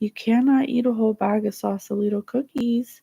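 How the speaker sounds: really loving, tender, kind, gentle tone. Kneeling to his eye level and taking the bag: retelling in a loving tone. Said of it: "I say in a really loving way".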